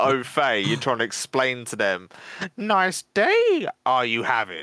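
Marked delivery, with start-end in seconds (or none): 2.6-4.6 high, drawn-out, slow, swooping voice. Explaining to someone who isn't au fait, in Yoda voice. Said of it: "nor does Yoda".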